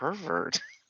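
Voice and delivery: quiet mutter, half under the breath. Voicing a character who reacts to an offer: muttered under breath. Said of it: "kinda under my breath go".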